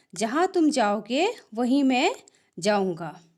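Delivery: normal talking voice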